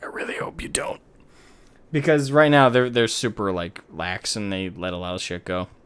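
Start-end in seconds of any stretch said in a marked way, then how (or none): 0.0-1.0 muttered, hushed whisper under the breath. Speaker acts out what they whisper whenever the tournament hosts mention it; whispering under breath. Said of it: "I'm whispering under my breath".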